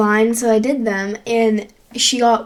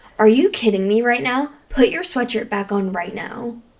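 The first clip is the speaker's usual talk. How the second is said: put-on sassy, attitude-filled scolding tone. Retelling what an older woman said to the speaker, imitating a scolding with attitude. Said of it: "and she said it with attitude".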